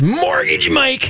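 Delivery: hyped, very high, excited announcer voice. Showing another speaker how to say the name: exciting announcer voice. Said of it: "you gotta say it like this".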